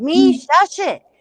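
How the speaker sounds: shrill, very high-pitched, very loud hollering. Retelling hollering at the cat last night: imitating own hollering. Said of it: "I started hollering at myself".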